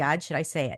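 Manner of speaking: ordinary talk, nothing marked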